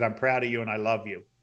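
ordinary delivery

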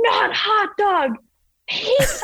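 very high, stretched-out shrieking scream. Retelling a dad teaching his kid to ski; retelling dad screaming. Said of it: "And he's like screaming it".

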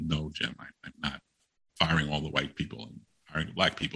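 very soft speech. Retelling what the speaker told jim, retelling speaking very softly. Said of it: "I said very softly".

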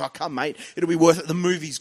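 put-on pushy, eager salesy tone, laying on charm. Retelling how the movie guest pushed the premiere invite: imitating a salesy pitch. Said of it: "he's selling".

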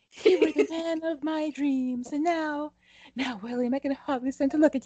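sudden, very high put-on Southern belle voice. Dramatically addressing a betraying character in a comic bit: sudden southern belle voice. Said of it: "I went suddenly Southern Belle".

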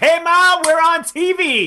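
put-on excited voice. Explaining an odd noise by acting out being thrilled on TV: imitating an excited person on TV. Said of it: "that was the excitement of".

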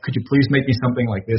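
mock, put-on pleading, begging tone. Retelling a request for an original piece for a Kickstarter, retelling begging. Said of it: "I begged him".

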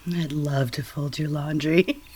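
very low, playful, put-on sultry sexy voice. Saying a line another speaker asked for, in a playful sexy voice. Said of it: "Do you want me to say anything to you?".

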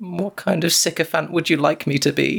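timid, meek voice. Recapping a scene where a woman questions Alfonso, imitating Alfonso's meek reply. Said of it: "he kind of meekly says".

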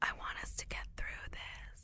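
put-on whisper. Retelling a tearful talk between a couple: imitating Peter whispering. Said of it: "Peter starts whispering".

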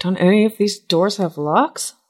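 private, sidelong aside. As the door opens, a character speaks to Kenithar: said under breath. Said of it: "say under my breath".

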